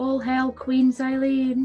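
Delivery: quiet muttering under the breath. Muttering an in-character aside: quietly under the breath. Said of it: "Very quietly under my breath".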